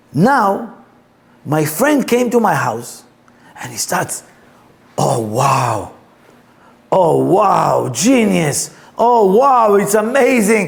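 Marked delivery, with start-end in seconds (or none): 4.9-10.6 put-on, slow, rising, increasingly excited tone. Retelling a friend tasting the stew: imitating an excited friend. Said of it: "he get more and more excited".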